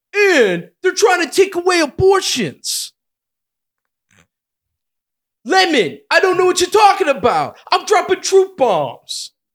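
very loud, high, blustering comic voice. Doing an impression for others to guess: Tracy Morgan impression. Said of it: "I'm doing Tracy Morgan".

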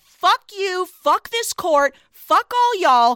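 mock heated, furious, dismissive tone. Retelling a film scene where the queen storms off: imitating Elizabeth's angry dismissal. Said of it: "She just turns away from him. She's like".

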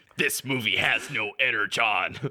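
acted robotic commander voice. Joking about reviewing a movie as Optimus Prime: Optimus Prime voice. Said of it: "you gotta do the whole review as Optimus Prime".

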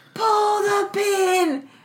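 put-on yelling. Retelling what the sidekick British guy yelled in the movie: imitating someone yelling. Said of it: "is just yelling, like".

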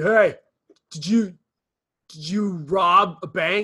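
very slow, loud, high, drawn-out cop yell. Imagining a cop yelling at someone walking down the street, in a cop voice. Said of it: "I love your cop voices".

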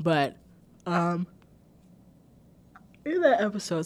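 speaking through a yawn. Recapping an earlier episode for listeners, speaking through a yawn. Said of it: "sorry, I yawned".

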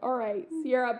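ordinary talk, nothing marked

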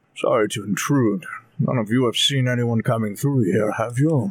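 mumbled, under the breath. Voicing a character stepping inside and looking around: muttering to himself. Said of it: "mutters to himself".

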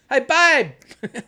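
loud shouting voice. Calling to Amy in another room during recording: yelling to someone in another room. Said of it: "I'm yelling at Amy into the microphone".

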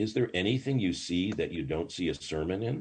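plain

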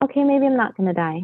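spoken aloud half to himself, inward. Retelling how the little boy calmed after the remedy, imitating someone saying it almost to himself. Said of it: "he said it almost to himself".

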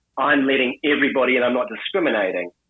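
normal talking voice

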